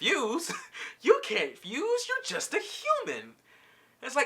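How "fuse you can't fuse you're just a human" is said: put-on very high, swooping, mocking laughter. Retelling a cartoon scene, imitating Rose laughing. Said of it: "she just starts laughing in his face".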